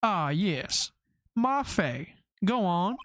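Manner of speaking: put-on slow southern accent, every word stretched. Voicing Marvin Grossberg, who tells a visitor to get on with it: southern accent. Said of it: "we're talking to Southerners".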